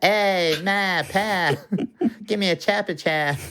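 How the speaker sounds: put-on Boston accent, high and drawn-out. Saying a kid's chopper chop request in a Boston accent. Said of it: "In a Boston accent, that sounds like".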